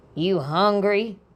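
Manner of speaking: gruff, rough-edged voice. Narrator reads a grandmother at the sink speaking to her grandson, gruff voice. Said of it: "she asked in a gruff voice".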